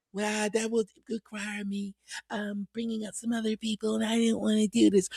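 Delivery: very soft, hushed, evasive voice. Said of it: "and that voice gets all soft".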